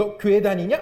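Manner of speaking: loud, sarcastic, cutting jab. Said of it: "비꼬듯이 얘기하면".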